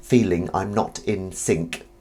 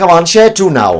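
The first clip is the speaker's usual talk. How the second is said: terrible put-on Welsh accent, very loud and higher; 10 semitones higher, 11 dB louder than usual. Asking the group to share, as a joke: awful Welsh accent. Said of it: "Awful accent".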